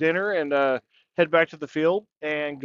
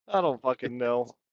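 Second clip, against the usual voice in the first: ordinary talk, nothing marked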